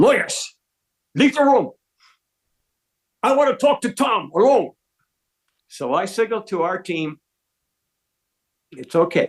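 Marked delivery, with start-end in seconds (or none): 0.0-4.7 put-on angry, pitched-up Dutch accent. Retelling what Hans said when he stood up in the meeting: imitating Hans's angry Dutch accent. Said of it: "he says with his Dutch accent".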